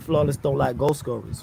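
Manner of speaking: ordinary talk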